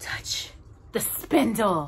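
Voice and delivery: sibilant, hissing witch voice. Narrator reading a fairy tale, voicing the witch: hissing as Maleficent. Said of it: "Maleficent hissed".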